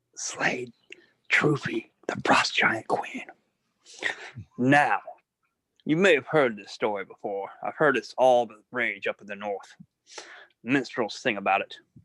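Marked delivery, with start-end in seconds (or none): 0.2-3.3 hushed whisper under the breath, barely voiced. Boasting to a stranger in character: whispering under breath. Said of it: "whisper under my breath to him".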